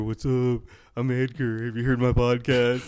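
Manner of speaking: abrupt, butting-in, interrupting delivery. Retelling how a podcaster jumped into a conversation: imitating Edgar. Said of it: "He fucking jumps in there".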